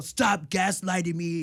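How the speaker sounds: deliberately deep, loud put-on voice. Retelling her usual reply to her husband: imitating her own deep voice. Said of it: "I got a deep voice".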